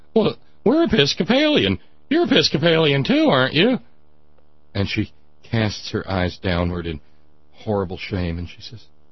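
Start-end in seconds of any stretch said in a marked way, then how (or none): 0.2-3.8 very high voice, cracking. Retelling a smitten eldest son speaking to a visiting guest, in a cracking voice. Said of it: "in this sort of cracking voice".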